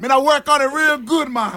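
very high fake Jamaican accent and patois. Offering to help Wiggy with a Jamaican accent, put-on Jamaican patois accent. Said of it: "I'm working on my patois".

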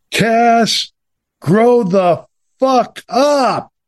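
very slow, drawn-out shriek, pitched very high. Retelling being screamed at across the newsroom: imitating James P. Gallagher screaming. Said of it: "he started screaming at me".

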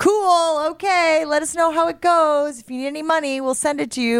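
easygoing, totally unfazed. Describing a teen threatening to leave home; imitating the parents' reply. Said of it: "And the parents are like".

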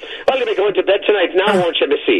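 put-on Irish accent, pitched very high. Quoting an actor who slips into the Irish mid-line, in a put-on Irish accent. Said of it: "he just slips right into the Irish".

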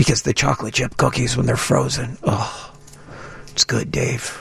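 very slow, breathy, hushed, drawn-out near-whisper. Talking with Dave, dropping into a lowered voice. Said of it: "You notice how I lowered my voice?".

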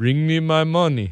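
put-on Haitian-tinged French accent. Imitating a childhood friend whose dad was from Haiti, with his French accent. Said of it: "he had like a kind of a French accent".

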